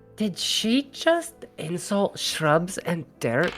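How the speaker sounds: hushed, whispered side remark. In a role-play scene, speaking aside to Oliver, whispering. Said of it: "I whisper over to Oliver".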